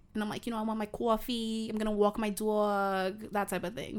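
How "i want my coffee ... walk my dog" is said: slow put-on Jersey accent, "dog" drawn out. Showing the only American accent they ever do: Jersey accent. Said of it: "the only American accent I ever do is like a Jersey accent".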